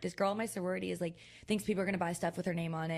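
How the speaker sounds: usual speaking voice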